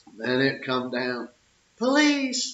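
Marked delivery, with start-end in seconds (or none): 1.8-2.6 very high-pitched, loud hollering. Retelling hollering for police while the ride spun: imitating hollering for police. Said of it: "I'd be hollering for police".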